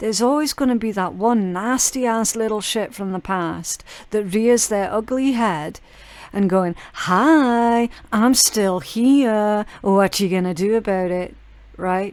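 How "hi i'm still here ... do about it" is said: put-on cocky, taunting attitude. Acting out a nasty person from the past who reappears: mimicking a taunting attitude. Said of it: "With an attitude on them a mile wide".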